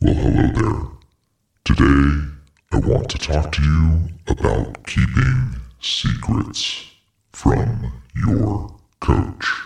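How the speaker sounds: low, digitally altered disguise voice. A podcast host opens the episode through a voice disguise app, disguised voice. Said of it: "what a fun way to use the voice disguise app".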